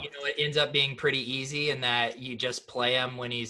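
ordinary talk, nothing marked

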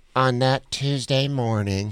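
put-on slow, earnest, amateurish, teenage-sounding narrator voiceover. Retelling a documentary voiceover as sounding like a high school kid. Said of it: "Do you remember that kid's voice?".

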